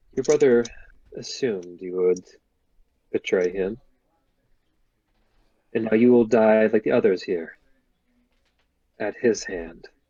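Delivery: hushed, whispered voice. The narrator voices an elf speaking to a player in the dark, whispering. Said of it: "the elf whispers in the dark".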